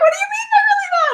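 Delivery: very high, fast, hysterical laughing shout of disbelief.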